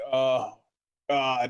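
words forced out in a heavy, hard grunt. Player voicing their character during a rough descent to a planet surface, grunting badly. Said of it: "I'm grunting right now, really bad".

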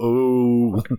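crowd going ooh, long and stretched out. Imitating an audience reaction: imitating an audience going ooh. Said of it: "I can hear 'em go".

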